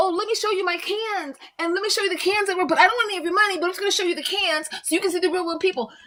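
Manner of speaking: high, sarcastic send-up voice. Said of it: "Only for clout, right?".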